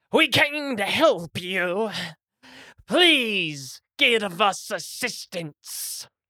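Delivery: restrained, mildly booming voice. A character suddenly calls out to the people inside the huts, booming voice. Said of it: "she suddenly just booms her voice".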